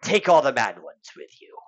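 put-on creepy, eerie old pirate voice. Replying to a player's question, a game character speaks in a creepy old pirate voice. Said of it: "creepy old pirate".

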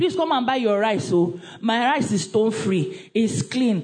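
ordinary delivery

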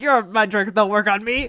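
small, creaturely little alien creature voice. Quoting Watto's line in a movie discussion; Watto voice. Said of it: "That's not how he sounds".

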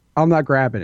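put-on, pissy, irritated child voice. Retelling getting out of the car, imitating pissy Addie. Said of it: "she was all pissy".

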